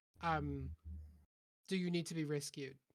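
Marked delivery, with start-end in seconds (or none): none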